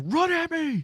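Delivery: piercing, very high scream. Retelling a game scene where a character yells at a creature: imitating Ellie screaming. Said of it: "Ellie is screaming at her like".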